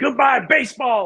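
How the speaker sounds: put-on very high, loud, enthusiastic announcer yell. Recalling Mariners radio calls heard growing up, imitating an announcer yelling. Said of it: "just yelling".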